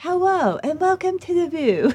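very high-pitched voice. Showing an audition impression: Barbara Walters impression. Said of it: "My three impressions were I tried to do Barbara Walters".

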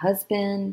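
ordinary talk, nothing marked

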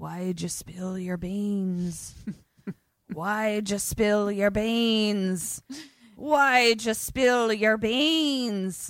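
very slow, stretched-out, beans drawn way out and stressed. Retelling a movie scene, imitating the voice heard: Willem Dafoe voice. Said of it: "we just hear Willem Dafoe's voice".

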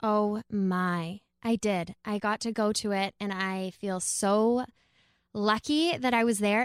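slow, hesitant, searching for each phrase. Describing how moved they were by the retreat: speaking slowly, at a loss for words. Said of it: "I am speaking slowly because I am at a loss for".

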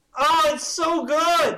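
shrill, very loud, high-pitched gushing yell. Agreeing with the other speaker about Ruby and Sapphire, shouting. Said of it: "Sorry, I'm shouting".

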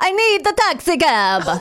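loud, slow fake Italian accent with drawn-out words. Retelling how a father talked to people in Italy: imitating a loud put-on Italian accent. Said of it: "speak in that country's accent".

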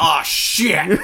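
high, very loud yelped exclamation. Joking about a magic sound, saying the line in Brian's voice. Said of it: "Brian's voice saying".

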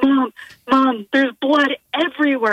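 mock frantic teenage boy voice, panicked, hyperventilating cry. Retelling a call from a son at home: imitating panicked hyperventilating son. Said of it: "my son is, like, hyperventilating".

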